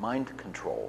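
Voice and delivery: mock flat deadpan delivery. Retelling what a man answered when asked about his work, retelling a deadpan answer. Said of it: "Just deadpan face".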